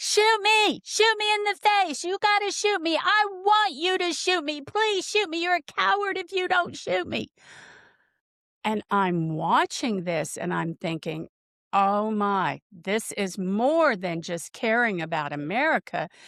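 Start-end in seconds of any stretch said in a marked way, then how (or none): 0.0-7.3 put-on very high-pitched, frantic shrieking scream. Speaker acts out what a woman screamed at an ICE agent: imitating screaming. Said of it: "She was screaming at this ICE agent".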